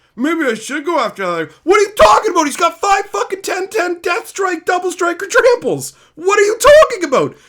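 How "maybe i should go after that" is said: casual, relaxed conversational speaking voice. Mocking what other players at the table say: imitating another player at the table. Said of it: "other people at the table will be like".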